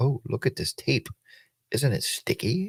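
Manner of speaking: laid-back, real mellow, soft and breathy. Retelling how a woman talks while unboxing a package: real mellow voice. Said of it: "Like that".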